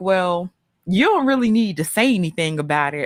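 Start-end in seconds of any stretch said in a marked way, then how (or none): none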